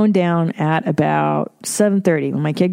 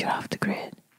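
soft, hushed, barely voiced whisper. Retelling what a man said while shutting the phone off: imitating someone whispering. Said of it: "He whispered it to me like that".

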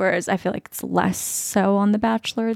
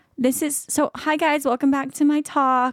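put-on high little voice of a three-year-old toddler; 6 semitones higher than usual. Retelling what Mila said sitting in the chair before the backdrop, imitating Mila's 3-year-old voice. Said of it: "but like in a 3-year-old voice".

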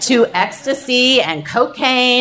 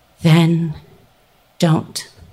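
imitated calm, steady voice, much lower pitch; 7 semitones lower than usual. Retelling what she answered, imitating a calm, steady voice. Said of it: "in this incredibly calm, steady voice".

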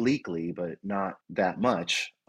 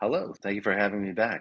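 slightly hoarse, raspy, a little croaky voice. Greeting the host on returning as a guest: hoarse from illness. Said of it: "a little hoarse".

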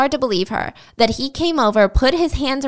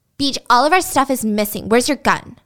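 put-on upset little girl voice, childish complaining. Retelling what a woman told BJ, like a mad girl telling her daddy. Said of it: "she said it like a girl telling her daddy about something she was mad about".

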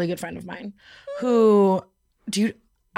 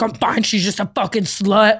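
mock-furious, louder outburst; 4 dB louder than usual. Retelling an ex's reply to someone asking if he's okay: imitating Chris, furious. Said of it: "He's furious".

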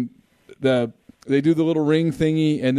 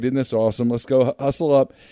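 usual speaking voice

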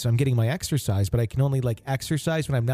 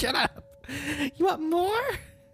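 put-on child's scream, higher; 3 dB quieter than usual. Retelling how a two-year-old yells at her sister: imitating a screaming toddler. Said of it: "the two-year-old is screaming".

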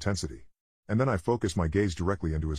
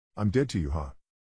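put-on flat, dejected monotone voice. Retelling a girlfriend's reply after being caught cheating: imitating a dejected monotone voice. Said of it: "She replies in a dejected, monotone voice of humility".

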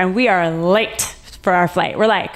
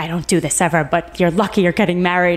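mock-angry voice, lower; 3 semitones lower than usual. Retelling a woman reopening the plane for the speaker and John, mimicking an angry woman. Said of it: "the woman's like all mad".

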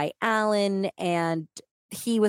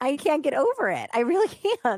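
stifled laughter, pitched up; 8 semitones higher than usual. Reacting to a horrible story with another speaker, holding back laughter. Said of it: "I'm really trying not to laugh".

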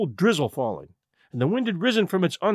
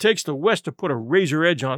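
ordinary delivery, nothing marked

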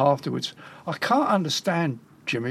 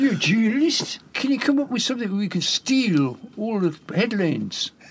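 put-on higher-pitched Newcastle accent; 7 semitones higher than usual. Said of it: "That's my Newcastle accent".

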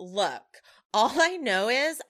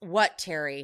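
put-on rude, curt tone, lower; 6 semitones lower than usual. Retelling a dinner scene where Raquel answers Terry: imitating Raquel's rude reply. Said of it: "Raquel is real rude and goes".

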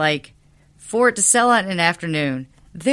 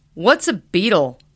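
acted super annoyed tone. Telling a story, act out a man asking this out loud, mock super annoyed. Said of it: "he was like super annoyed".

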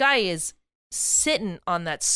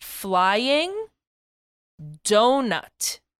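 deliberately slower, drawn-out delivery; 4 dB louder than usual. In a guessing game, repeating a clue to the others, saying it slower. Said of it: "You're saying it slower".

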